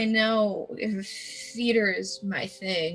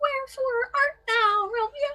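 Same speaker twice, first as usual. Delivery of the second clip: bad put-on girl voice, much higher, slower. Describing someone helping a friend run lines, doing a bad girl voice. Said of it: "He's doing like a bad like girl voice".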